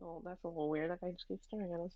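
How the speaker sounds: quiet, muttered side remark. A player's character speaks to Rybus, muttering under breath. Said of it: "Like under my breath".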